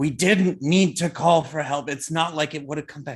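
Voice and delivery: restrained, low-key, nagging reproachful tone. Voicing a man on a fishing boat toward a woman: low-key berating. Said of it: "low-key berating her".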